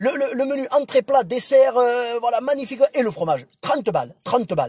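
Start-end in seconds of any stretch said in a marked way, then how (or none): 3.6-4.7 put-on southern French accent. Recalling the guy at a mountain restaurant quoting the price, southern french accent. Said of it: "Il avait un accent du sud comme ça".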